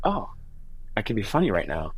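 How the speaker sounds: ordinary talk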